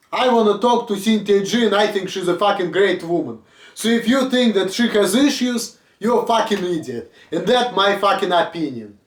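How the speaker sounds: ordinary delivery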